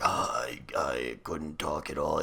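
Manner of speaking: mock rough, trashed voice. Showing how bad their voice sounded before: imitating own broken, trashed voice. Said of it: "I sounded like this".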